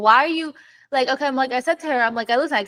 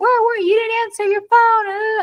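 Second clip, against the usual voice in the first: put-on very high, shrill, furious scream; 9 semitones higher than usual. Retelling how mom confronted the speaker at 1 a.m.: retelling mom screaming. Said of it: "she's screaming at me, like".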